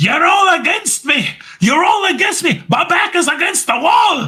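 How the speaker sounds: play-acted shrill, very high, repeated, relentless yelling. Recount how Drew ran up after the suspension and kept repeating himself, imitating Drew yelling. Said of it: "he just kept yelling that".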